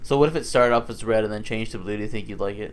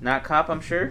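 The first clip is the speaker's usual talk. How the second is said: normal talking voice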